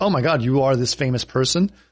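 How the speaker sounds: normal talking voice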